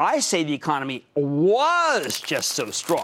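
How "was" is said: hard stress on "was", past tense marked. Contrasting with others' view of the economy: stress on WAS. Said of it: "Emphasis on the past tense".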